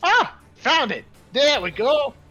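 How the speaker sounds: shouting. Narrator voices a character at the end of his turn, shouting. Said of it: "you hear him shout".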